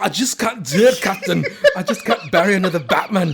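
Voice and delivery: very loud British accent drifting into Scottish. Repeating the movie line in a put-on British accent. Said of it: "My British is a little Scottish".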